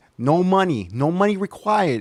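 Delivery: New Jersey accent. Speaker recommending free editing software to viewers, new jersey accent. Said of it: "makes me sound like I'm really from New Jersey".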